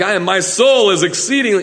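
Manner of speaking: self-assured, bold, confident proclaiming voice. Showing the wrong way a scripture line might be read: bold, confident delivery. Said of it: "It wasn't boldly like".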